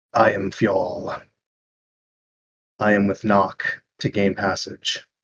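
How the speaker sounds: gritty, rough, stony-sounding gravelly voice. Voicing a stone giant answering the group: gravelly voice. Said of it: "And in a gravelly voice".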